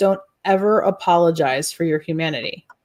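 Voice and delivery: stern delivery. Retelling what a mentor said at dinner after the divorce: imitating Daryl's stern tone. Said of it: "he was kind of stern about it".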